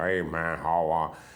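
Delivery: put-on American western accent. Speaker imitates how characters in american westerns talk, american western accent. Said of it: "they talk with American accent".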